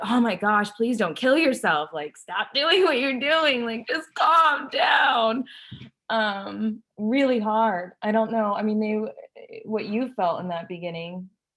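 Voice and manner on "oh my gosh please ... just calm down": weary, high, loud, frustrated yelling. Retelling own past words to a child: imitating own frustrated yelling. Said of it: "me frustrated, yelling mommy".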